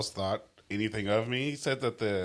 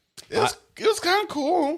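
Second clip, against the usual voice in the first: voice suddenly leaping very high and loud; 7 dB louder than usual. Answering whether another speaker liked an album: voice jumping up in pitch. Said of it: "Your voice went up, like, three octaves".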